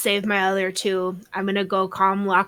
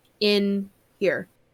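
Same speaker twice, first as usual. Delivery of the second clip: really slow, deliberate, drawn-out words. Hoping the other player gets a double meaning, saying it really slowly. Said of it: "I say it really slow".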